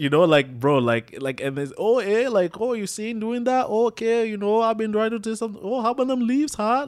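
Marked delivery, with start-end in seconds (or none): 1.8-6.9 very high, folksy, neighbourly Canadian chit-chat. Speaker describing how Canadians talk, imitating Canadian small talk. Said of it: "that's how they talk".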